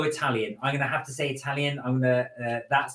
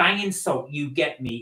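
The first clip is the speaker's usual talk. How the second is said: usual speaking voice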